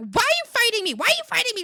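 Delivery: put-on very high, very loud, shrill, swooping freak-out. Retelling a calm talk with mom that upset her, imitating mom freaking out. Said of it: "And then she freaked out".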